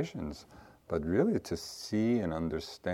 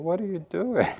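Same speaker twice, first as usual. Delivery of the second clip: put-on English spoken with a Yiddish-inflected accent; 12 semitones higher, 5 dB louder than usual.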